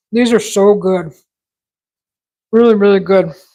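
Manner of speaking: talking while chewing, mouth full. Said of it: "hear the crunch while I'm chewing".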